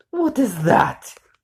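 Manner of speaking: very loud, shrill hissing voice. Reading a story, the queen sees what her daughter found: hissing queen voice. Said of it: "She hissed when she caught sight of Discord".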